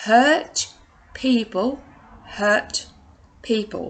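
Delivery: drawn out word by word, very slow. Sharing a favorite saying, spoken very slowly. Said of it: "I'll say it very slowly".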